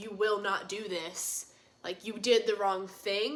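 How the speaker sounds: put-on, very firm, stern scolding tone. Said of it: "if I very firmly am like".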